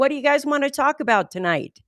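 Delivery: high, shouted, called-out voice. Retelling how a speaker on stage called out to the audience: imitating someone shouting. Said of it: "he shouted out to them".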